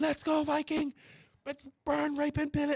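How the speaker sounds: acted, very high, shrill, all-out scream. Speaker retells cheering from on top of a Connex, retelling own screaming. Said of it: "screaming like".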